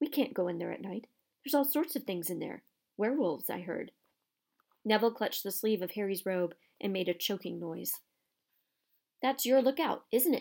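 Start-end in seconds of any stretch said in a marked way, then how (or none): 9.2-10.4 gleeful voice cracking with delight. Reading a story, narrator voices a man answering the students: voice cracking with glee. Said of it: "his voice cracking with glee".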